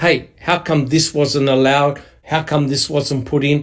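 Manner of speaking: usual speaking voice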